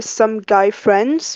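friends stressed, slow with a rise. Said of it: "emphasis on friends".

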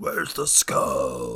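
very deep eighties cartoon villain boogeyman voice. Imitating a villain from the movie who asks for the skull: Doctor Claw voice. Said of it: "and he's voiced by Doctor Claw".

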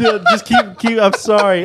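very high, swooping, giggle-choked voice. Apologizing to others for interrupting, laughing while talking. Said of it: "I got the giggles now".

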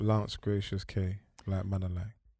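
listless, flat, quiet monotone with zero energy. Listing names aloud before a listener remarks on the delivery: flat, no energy. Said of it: "You said that with no energy whatsoever".

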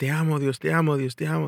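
put-on full-lung yelling. Speaker recounts a man looking up at the ceiling; retelling a man yelling. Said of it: "starts yelling out of the top of his lungs".

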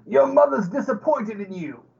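high, jeering, yelled shout. A player casts Vicious Mockery on an enemy, yelling a taunt in Goblin. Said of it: "I'm just going to yell out in Goblin".

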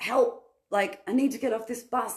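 high, frantic, out-of-control yelling. Retelling running down the stairs of a bus, retelling yelling for help. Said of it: "i was like yelling".

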